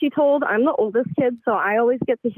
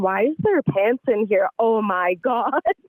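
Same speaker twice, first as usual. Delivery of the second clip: normal talking voice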